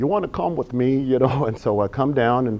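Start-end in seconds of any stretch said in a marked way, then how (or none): 0.0-1.4 put-on heavy English accent, higher pitch. Retelling a man's invitation to come along, in a heavy english accent. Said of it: "he's got this heavy English accent".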